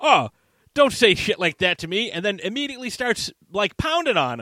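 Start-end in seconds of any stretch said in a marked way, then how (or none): 0.0-2.1 put-on fretting, prissy robot butler voice. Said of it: "and he's like".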